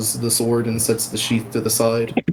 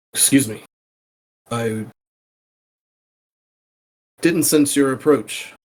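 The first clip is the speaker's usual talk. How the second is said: pointed delivery, meant to be overheard; 3 semitones higher than usual. Game master as Wrath, addressing you so the nearby group might hear, Wrath speaking loudly. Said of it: "trying to say it loudly enough".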